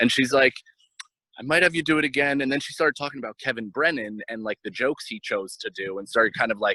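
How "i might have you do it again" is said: put-on relaxed, casual Israeli accent. Retelling what Esty said after she came over and sat down, imitating Esty's Israeli accent. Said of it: "in her Israeli accent".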